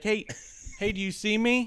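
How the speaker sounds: high, slow, unhurried calling-out voice. Retelling how family members greet the speaker online: imitating family members. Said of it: "There's like".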